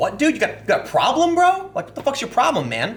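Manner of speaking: high, super angry, aggressive, furious outburst. Retelling how a man reacted to a cheeseburger request, acting out a furious outburst.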